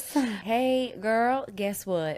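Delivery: slow, high Southern Texas drawl, "hey" drawn way out. Asked to show a best accent: Southern American Texas accent. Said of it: "My best one's probably like the Southern American Texas accent".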